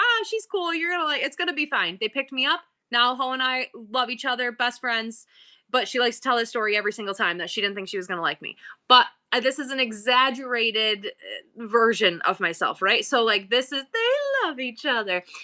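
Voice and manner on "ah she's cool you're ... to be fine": high, bright, upbeat, reassuring tone. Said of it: "her daughter, was like".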